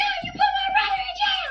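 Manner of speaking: very high, shrieking, sobbing screaming cry. The speaker replays an outburst at their mom over a brother's arrest: retelling screaming and crying. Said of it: "screaming and crying".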